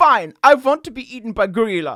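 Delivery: fake German accent. Imagining what hungry children would say: mock German accent. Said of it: "why are they German?".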